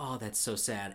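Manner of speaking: ordinary talk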